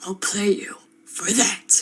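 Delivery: slow, drawn-out, badly done anime rival voice. Retelling a dream where a character challenges the speaker: worst Vegeta impression. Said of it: "the worst impression I've ever done of Vegeta".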